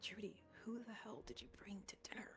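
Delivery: whispered. Narrating a sister whispering to trudy at dinner: whisper. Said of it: "She whispers".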